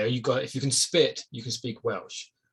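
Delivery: ordinary delivery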